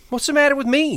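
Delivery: indignant, angry, high-pitched outcry. Told by Lenny he shouldn't talk to her, she answers him: cried out angrily. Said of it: "She cried".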